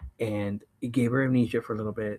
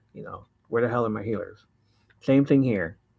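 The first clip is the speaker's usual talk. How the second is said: ordinary talk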